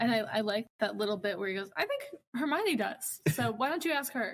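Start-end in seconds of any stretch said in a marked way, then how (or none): 1.8-4.3 put-on, snide, sarcastic, high and swooping. Quoting a sarcastic Harry about a classmate: imitating sarcastic Harry. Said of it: "Harry's being really sarcastic".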